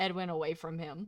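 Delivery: ordinary delivery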